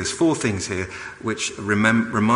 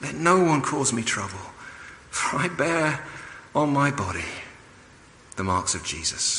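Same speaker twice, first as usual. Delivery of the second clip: put-on worn-out, weary, exhausted, quiet delivery; 4 semitones higher, 5 dB quieter than usual. Speaker reading a letter writer's final words aloud, weary and exhausted. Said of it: "It's almost like he's just exhausted by it".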